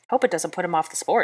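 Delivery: plain reading voice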